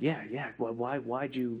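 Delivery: slow, hushed, drawn-out stage whisper. Retelling asking a dad why he bought a Rolex: imitating a half-whisper. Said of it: "we're whispering".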